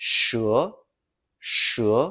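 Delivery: rising second tone on "she". Showing a learner a Chinese syllable: rising tone on she. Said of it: "Use a rising tone".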